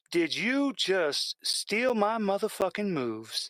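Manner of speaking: large woman's voice. Voicing a large female dancer confronting a player: voicing a large female dancer. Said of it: "this large female just turns and just looks at you and went".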